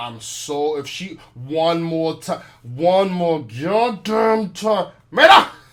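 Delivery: loud, very slow, drawn-out, fed-up exasperation. Retelling how he said a woman's name after customers complained, imitating his exasperated tone. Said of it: "he said it with the tonation of like".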